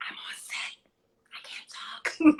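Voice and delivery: slow, hushed whisper under the breath. Retelling answering a phone call quietly on a movie set: retelling own past whisper. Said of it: "Girl, why are you whispering?".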